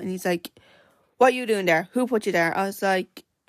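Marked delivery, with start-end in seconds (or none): none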